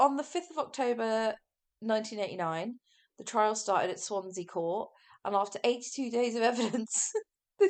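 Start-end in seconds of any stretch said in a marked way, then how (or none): 5.2-7.7 talking through laughter, higher pitch. Recounting a trial's delays while laughing: laughing while talking. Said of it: "I'm not laughing 'cause it's funny".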